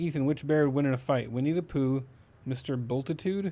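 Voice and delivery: ordinary talk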